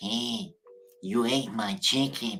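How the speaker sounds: slow, drawn-out cartoon character voice. Retrying a cartoon impression after a failed first attempt: Ren impression. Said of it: "That's more Ren".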